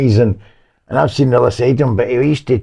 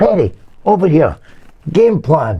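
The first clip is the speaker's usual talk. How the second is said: play-acted shouting, calling out; 4 semitones higher than usual. Retelling the manager calling a player back during the game: imitating a manager shouting. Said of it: "George Graham shouting".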